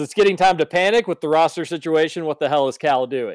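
plain

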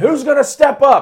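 shrill, high, loud, furious yell. Retelling a wrestler backstage in the locker room: imitating Drew McIntyre yelling. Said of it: "he's just yelling".

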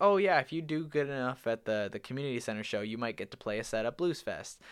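ordinary talk, nothing marked

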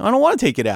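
fun-loving, funny delivery. Retelling a man refusing the audio technician's request, in a funny way. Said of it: "but like in a funny, fun way".

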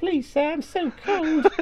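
very high-pitched Victorian urchin voice. Describing going out in bitter cold, acting as a Charles Dickens street waif: Dickens street waif voice. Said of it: "Charles Dickens, like, street waif where I'm like".

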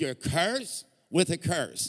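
put-on, slow Southern American drawl. Imitating preachers quoting a tithing verse: imitating a Southern US accent. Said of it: "they always throw the verse right before it".

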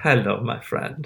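very deep, quiet, calm, ominous and menacing voice. Imitating the actor's character just sitting there: imitating a calm but terrifying greeting. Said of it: "so good at being both engrossing and terrifying".

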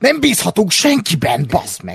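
annoyed, fed-up snap. Retelling how Obi-Wan snapped at the girl's questions, mimicking Obi-Wan snapping irritably. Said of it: "az obi ideges idegesen odaszól".

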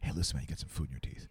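put-on under-breath mutter. Showing how to tell someone about food in their teeth: under the breath. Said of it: "kinda do it, uh, under my breath".

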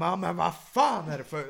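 put-on heated, furious shouting yell. Retelling shouting at a man in the cinema: retelling own shout. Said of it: "Och då skriker jag".

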